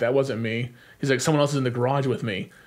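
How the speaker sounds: ordinary talk, nothing marked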